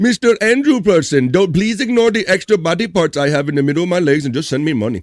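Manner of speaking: put-on Indian accent. Acting out a money-request message, put-on Indian accent. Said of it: "I'm doing Indian accent".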